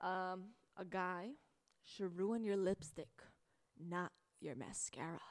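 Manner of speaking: slow, grand, theatrical, dramatic delivery. Reading out a cheesy quote, in a dramatic voice. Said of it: "How do you like my dramatic voice?".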